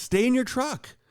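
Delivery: very high-pitched yell. Retelling warning a man to stay in his truck: retelling own yell. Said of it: "And I yelled at him".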